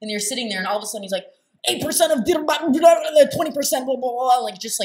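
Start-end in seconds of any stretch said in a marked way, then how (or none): 1.7-4.4 mock shout, much higher, louder. Mocking a podcast host who confronts his female guests, imitating shouting statistics. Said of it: "literally shouting statistics at you".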